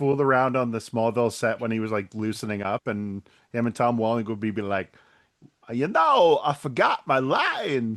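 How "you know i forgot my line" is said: very slow, drawn out, swooping pitch. Retelling how an actor joked around on set: Christopher Walken impression. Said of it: "I love his Walken impression".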